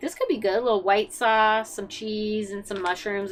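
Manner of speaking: ordinary talk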